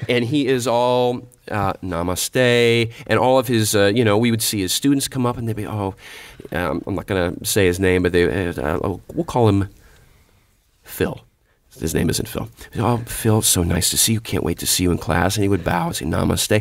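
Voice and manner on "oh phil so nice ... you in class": put-on calm peaceful voice, much lower. Retelling how a teacher greeted his students, in a mock-peaceful greeting. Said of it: "Very peaceful".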